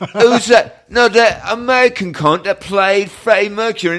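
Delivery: very high, loud, drawn-out strong put-on Cockney accent. Imitating the people on the BAFTA board: put-on deep Cockney accent. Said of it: "Cockney, going".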